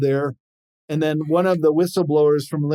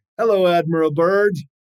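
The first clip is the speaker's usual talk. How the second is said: put-on speaking with German accent; 3 semitones higher, 3 dB louder than usual. Retelling what UFO pilots said over the wire to an admiral, German accent. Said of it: "with a German accent".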